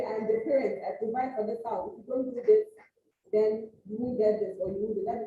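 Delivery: ordinary delivery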